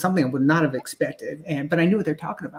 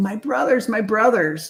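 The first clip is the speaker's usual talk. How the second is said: high, sobbing, bawling cry; 6 semitones higher than usual. Retelling seeing lights overhead and calling out: retelling own bawling. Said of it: "And I just started bawling".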